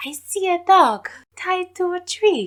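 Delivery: put-on very high, girlish little-girl voice, a bit loud. Recapping a scene, imitating Madame Saturn talking to Sankora in her little-girl voice. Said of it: "this like high-pitched little girl voice".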